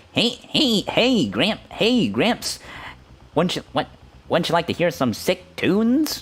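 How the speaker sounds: very high, nasal, nose-held voice. Trying to do a remembered voice for others: nasal, holding-nose voice. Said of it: "he also sounded like he was holding his nose".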